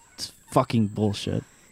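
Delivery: put-on mutter under breath. Retelling their own reaction while playing a game, muttering under breath. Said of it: "Like under my breath".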